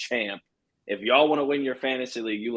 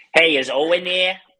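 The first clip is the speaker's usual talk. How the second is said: put-on stupid-sounding Boston accent, loud and high; 6 semitones higher, 7 dB louder than usual. Retelling rude phone calls from Boston fans: imitating a Boston accent. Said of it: "with that stupid ass accent".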